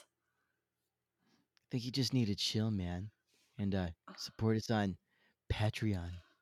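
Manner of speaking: soft, chilled-out, laid-back surfer dude voice. A podcast host joking about the surfer voice, plug Patreon in a laid-back surfer voice. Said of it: "Maybe it's the surfer voice".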